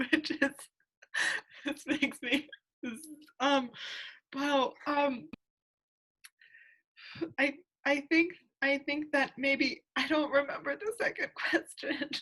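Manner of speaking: high, tearful, halting voice, crying while talking. Trying to recall the second question after being moved, crying while talking. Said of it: "now I'm crying and thinking about that".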